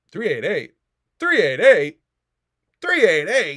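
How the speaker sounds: overexcited. Repeating a subscriber count until told to relax: worked up. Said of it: "Can you relax, dude?".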